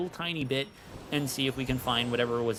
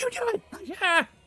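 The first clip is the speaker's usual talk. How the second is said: play-acted very high, loud shrieking scream; 5 dB louder than usual. Retelling how Carmine screamed at him: imitating Carmine screaming. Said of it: "Just screaming at him like".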